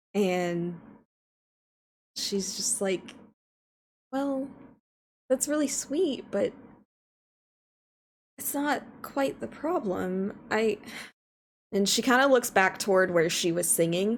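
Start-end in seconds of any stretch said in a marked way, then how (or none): 4.2-10.8 close to crying, holding it in. Voicing a character whose chin quivers as she answers: character on the verge of tears. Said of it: "her chin kinda starts to quiver".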